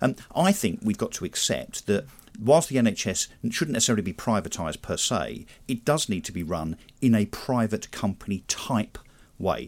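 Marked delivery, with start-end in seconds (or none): 5.7-9.7 very slow, careful, emphasized delivery. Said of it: "I'll say that very slowly and carefully".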